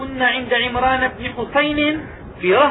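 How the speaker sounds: plain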